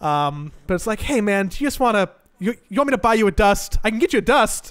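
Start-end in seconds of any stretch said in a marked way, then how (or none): 1.0-4.7 fake-friendly, bright, slightly high, passive-aggressive tone. Showing a backhanded offer to a teammate: acted friendly but passive-aggressive tone. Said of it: "a friendly tone".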